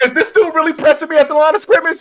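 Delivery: high-pitched mock scream. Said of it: "is screaming at Joe Burrow".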